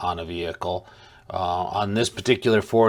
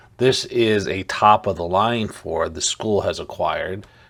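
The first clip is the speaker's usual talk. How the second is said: ordinary talk, nothing marked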